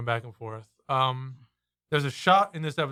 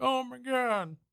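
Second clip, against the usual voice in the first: mock very high, bratty crying wail; 11 semitones higher than usual. Retelling how a character starts crying: imitating a bratty child crying. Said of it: "like a brat crying".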